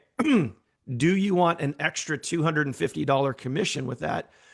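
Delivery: hoarse speech. Host asking viewers to comment a number, voice going hoarse. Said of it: "I'm not sure why I'm getting hoarse now".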